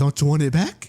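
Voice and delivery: put-on luring clown voice. Retelling the clown holding up the boat to lure Georgie: Pennywise carnival voice. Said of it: "lures him in with that carnival voice".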